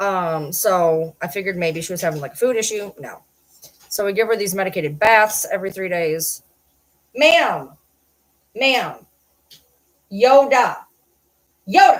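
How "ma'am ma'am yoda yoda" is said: very slow, loud, drawn-out, swooping yell. Calling a deaf dog by name: yelling at a dog. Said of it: "That's why I'm yelling at her".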